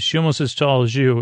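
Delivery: ordinary delivery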